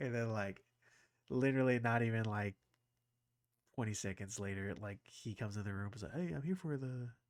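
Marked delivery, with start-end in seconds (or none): 6.1-7.1 put-on British accent, higher and quieter. Retelling how a guest greeted him: imitating a British accent. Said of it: "he says with an British, British accent".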